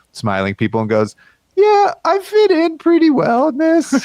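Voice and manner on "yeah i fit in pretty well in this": very high-pitched, slow, drawn-out voice. Retelling a drunk friend showing off a photo: imitating Blake's voice. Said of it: "Is this the official Blake voice".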